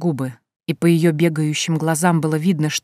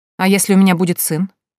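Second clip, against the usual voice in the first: plain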